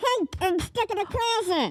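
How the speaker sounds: high ventriloquist voice, mouth closed, lips still. Speaker shows off claimed ventriloquism skills, in a ventriloquist voice. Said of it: "I have ventriloquism skills".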